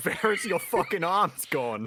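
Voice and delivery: put-on heavy, hard Australian accent, shrieked very high and loud. After claiming they only know one version, the speaker performs it: hard Australian accent. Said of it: "the real hard Australian accent".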